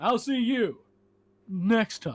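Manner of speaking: loud, drawn-out, big, showy delivery. Showing how a video ends: Markiplier outro voice. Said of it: "the end of his video, he goes".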